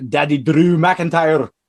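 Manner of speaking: put-on, fake Scottish accent. Naming a wrestler in an upcoming match lineup: put-on Scottish accent. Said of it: "that's my lovely spot-on Scottish accent".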